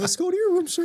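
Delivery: very high-pitched voice. Retelling how a man picked someone up and spoke, imitating a high-pitched voice. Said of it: "he had a really high pitched voice".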